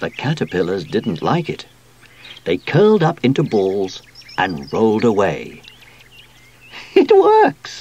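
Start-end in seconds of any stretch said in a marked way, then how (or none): 6.9-7.8 very high, astonished, surprised laughing voice. Sue watches the sprayed caterpillars roll away; surprised laugh. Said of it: "laughed Sue in surprise".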